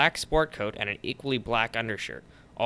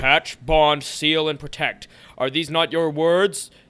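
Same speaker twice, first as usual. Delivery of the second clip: loud, raised, angry booming voice; 5 semitones higher, 7 dB louder than usual. Narrator reading a voice answering Phil: booming angrily. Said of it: "The voice boomed angrily".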